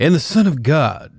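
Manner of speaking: drawn-out radio announcer voice. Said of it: "I can't do the voice".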